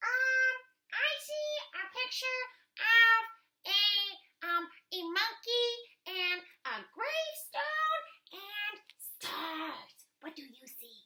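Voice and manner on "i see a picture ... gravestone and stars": very high, loud little puppet voice. Reading aloud, speaking as her puppet assistant. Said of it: "reads aloud ... with her puppet assistant".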